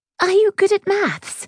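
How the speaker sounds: high-pitched, rather desperate voice. A girl meeting possible new friends puts in a question, rather desperate. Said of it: "her voice rather desperate".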